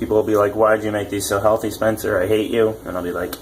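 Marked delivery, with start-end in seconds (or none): none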